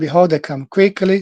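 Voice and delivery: normal talking voice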